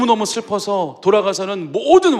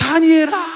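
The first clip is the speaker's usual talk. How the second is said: high, put-on calling-out shout; 9 semitones higher than usual. Retelling a king calling a man's name at the lions' den, imitating someone shouting. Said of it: "다니엘아 막 소리를 지르는 거죠".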